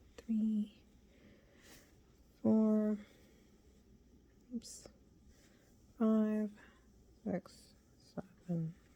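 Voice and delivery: indistinct, unclear mumble. Counting chain stitches while teaching a crochet round, mumbling. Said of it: "I'm mumbling".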